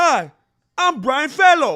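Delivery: very loud, very high, big-mouthed, huge-sounding talk. Imitating how someone talked, real big with the mouth: Tracy Morgan voice. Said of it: "He just talked like this real big with his mouth".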